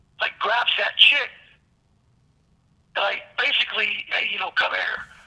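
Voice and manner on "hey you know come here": ordinary delivery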